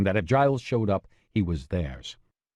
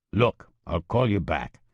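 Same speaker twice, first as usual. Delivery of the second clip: gruff, rough voice. Reading a phone call aloud, the man ends the call: gruff voice. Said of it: "the man with the gruff voice said".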